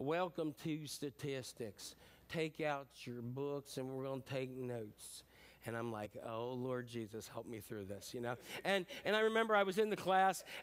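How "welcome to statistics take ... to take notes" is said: put-on slow, dragged-out West Virginia accent. Imitating their statistics teacher addressing the class: West Virginia accent. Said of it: "he had a West Virginia accent with that".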